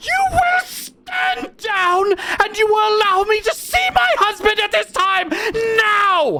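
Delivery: very high, top-of-lungs hysterical screaming. Voicing a hysterical noblewoman demanding to see her husband: screaming at the top of her lungs. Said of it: "she is screaming at the top of her lungs".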